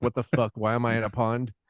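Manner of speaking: put-on confused horse voice. Retelling a movie scene, voicing the horse: voicing a confused horse. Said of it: "the horse just looks confused".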